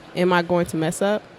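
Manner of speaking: ordinary talk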